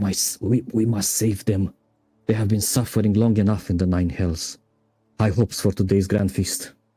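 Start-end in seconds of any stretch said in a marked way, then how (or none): 0.0-4.6 full of anguish and anxiety. Voicing the Hell Riders of Elturel for the listeners: anguished and anxious. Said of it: "a lot of anguish and a lot of anxiety".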